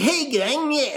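over-the-top, very high, cartoonish anime dub voice. Mocking how game voiceovers sound; cartoonish anime-dub voice. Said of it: "they just sound like fucking Ninja Turtles or like anime dubs".

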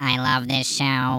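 slow, mechanical robot voice. Reading a listener review that asks not to sound robotic, robot voice. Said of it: "I'm gonna do exactly the opposite".

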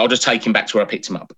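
ordinary delivery

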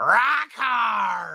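creaky, swooping voice, words hard stretched. Describing a wrestler's catchphrase: Juice Robinson voice. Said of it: "he's just got that voice where he goes".

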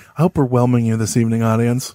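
calm public radio-style voice. Podcast host addressing the audience in an NPR voice. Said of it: "This is my NPR voice".

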